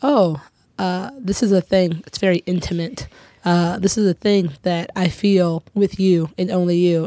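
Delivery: ordinary talk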